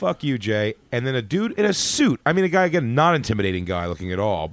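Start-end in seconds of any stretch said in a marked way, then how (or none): 0.0-0.7 mock-playful teasing tone, slower. Recalling a waitress calling out as he left the club, retelling a playful jab. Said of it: "Like, playfully".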